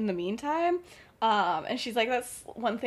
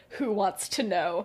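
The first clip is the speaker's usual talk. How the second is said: mock severe, very stern, no-nonsense tone; 2 semitones lower than usual. Retelling a phone call where the friend's mom answers: imitating a stern reply. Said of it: "very sternly is like".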